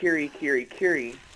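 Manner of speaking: ordinary delivery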